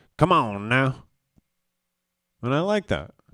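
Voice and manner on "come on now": raised, put-on Louisiana accent. Talking about accents, the speaker quotes friends from Louisiana, in a Louisiana accent. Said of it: "My girl loves my Louisiana accent".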